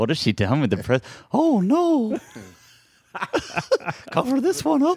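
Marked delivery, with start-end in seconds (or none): 1.3-5.0 pitched way up high and dragged out. Mid-conversation, the speaker adds a quick aside in a Mickey Mouse impression. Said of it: "That was my Mickey Mouse impression".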